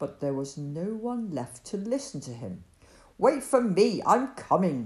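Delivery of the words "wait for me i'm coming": loud, cross screech. Joram, left behind, calls after the others to wait, cross screech. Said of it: "he screeched crossly".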